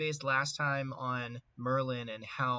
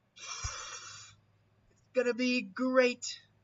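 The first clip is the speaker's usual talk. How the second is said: high, slow, drawn-out politician's drawl; 11 semitones higher than usual. Doing an impression for the viewers: Trump impression. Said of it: "Did I make a good Trump impression?".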